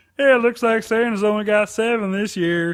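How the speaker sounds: odd, dopey voice. Imitating the local man who picks up the town's old reindeer, strange dumb voice. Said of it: "a really great, strange voice".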